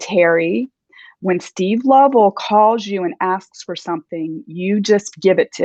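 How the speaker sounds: close, direct, confidential, matter-of-fact aside. Retelling what a boss said leaning close: imitating boss speaking quietly. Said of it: "talks to me really quietly".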